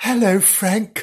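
very gentle voice. Gillian greets frank in a very gentle voice. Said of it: "said Gillian in a very gentle voice".

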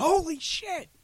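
acted, shrieking, very high-pitched excited scream. Retelling a wife's reaction to an announcement: imitating someone screaming. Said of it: "my wife just starts screaming".

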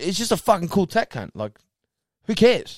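put-on high, fed-up, dismissive irritated outburst. Retelling how an acquaintance gets mad when asked about tattoos: imitating an angry friend. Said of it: "he gets mad when people ask".

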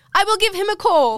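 loud put-on Italian accent, pitched way up. Retelling a man's reply when asked about the tattoo guy: italian accent. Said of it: "I put on an Italian accent there".

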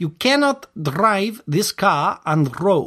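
attempted, put-on Russian accent. Speaker tries out a voice while acting a scene, attempted Russian accent. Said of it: "It's a Russian accent".

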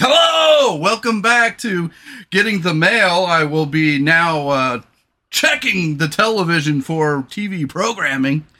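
radio DJ voice, "now" drawn out. Showing how he talks when he slips into his spiel, in a radio DJ voice. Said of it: "I don't talk like this in my normal day-to-day life".

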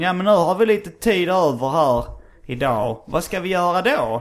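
put-on broad Scanian accent. Retelling what the speaker's biology teacher said in class: thick Scanian accent. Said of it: "hon pratade väldigt grov skånska".

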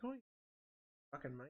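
very quiet, hushed put-on British accent, half to self. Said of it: "a British accent".

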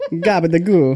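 put-on Norwegian accent. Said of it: "I'm good at accents".

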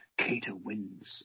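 muttered quietly under the breath. Retelling a film character's line after winning a fight, muttered under his breath. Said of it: "under his breath, he'll go".

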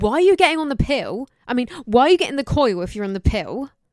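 loud, scary shouting. Retelling how the speaker's mum shouted at them, imitating someone shouting. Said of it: "she was shouting at me".

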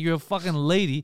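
ordinary talk

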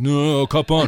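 mock angry, aggro, irritated tone. Retelling a friend's reply while kayaking, imitating an aggro friend. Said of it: "he was getting real aggro about it".

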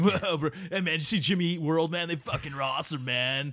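put-on frat bro voice. Mocking fans of generic 90s rock bands, speak in a frat bro voice. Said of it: "crappy 90s generic rock bands that like frat boys listen to".

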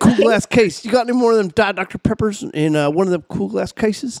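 high-pitched American tourist voice. Repeating the american tourist's words to the others: imitating an american tourist. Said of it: "this American tourist came up to me".

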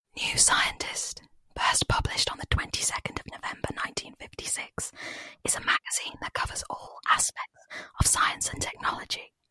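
hushed whisper without full voice. Speaker's first one, addressed to you guys: whispered without full voice. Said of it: "I'm going to whisper to you guys".

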